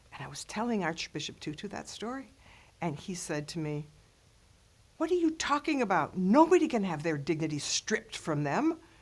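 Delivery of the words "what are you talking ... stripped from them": harsh, really angry, stern tone. Retelling how Archbishop Tutu scolded the speaker: imitating an angry scolding. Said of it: "in really angry tones".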